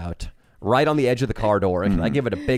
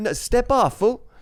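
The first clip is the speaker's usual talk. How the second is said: put-on voice, higher pitch; 13 semitones higher than usual.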